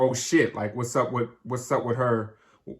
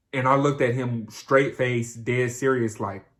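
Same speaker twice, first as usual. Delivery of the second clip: usual speaking voice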